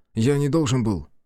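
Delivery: ordinary delivery, nothing marked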